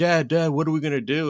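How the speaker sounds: high, loud panicked pleading. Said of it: "my son's panicking".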